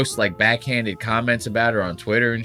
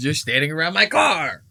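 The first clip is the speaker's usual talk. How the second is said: angry, heated, pitched-up complaining tone; 6 semitones higher than usual. Retelling a clip where Justin yells at paparazzi: imitating Justin angrily. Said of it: "He goes".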